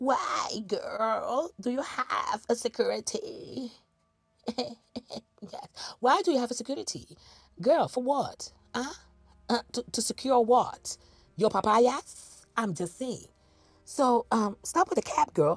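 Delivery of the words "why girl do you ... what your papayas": put-on British accent. Questioning a woman about the security by her door: put-on British accent. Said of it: "am I uh, Brititi uh, voice?".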